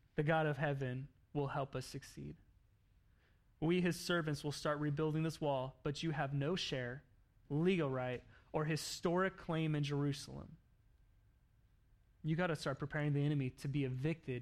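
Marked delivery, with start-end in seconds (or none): none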